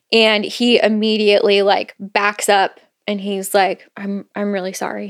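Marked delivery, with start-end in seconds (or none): 3.9-5.1 quiet, soft voice, getting even quieter. Retelling a character's apology after grabbing someone's arm: imitating someone speaking quietly. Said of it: "Just really quietly".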